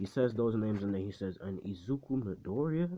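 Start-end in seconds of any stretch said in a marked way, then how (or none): 1.7-2.9 question-like rising intonation on Midoriya. Retelling a scene where the teacher reads out names, saying the name like a question. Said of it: "he says it like kind of like a question mark".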